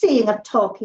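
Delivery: plain reading voice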